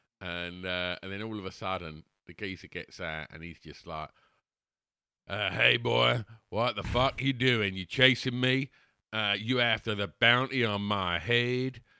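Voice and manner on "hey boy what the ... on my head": put-on loud, belted American accent. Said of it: "That's a really good American accent".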